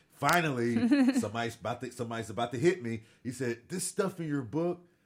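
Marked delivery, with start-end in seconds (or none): 3.7-4.8 put-on stern voice, higher and faster. Retelling what a man said about the speaker's book, imitating a stern voice. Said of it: "because he had a very stern voice".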